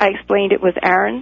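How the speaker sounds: ordinary talk, nothing marked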